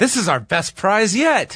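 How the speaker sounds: thick, mocking sarcastic drawl, swooping sing-song. Speaker quotes someone's remark during a prize plug, retelling a very sarcastic remark. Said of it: "in the most sarcastic tone".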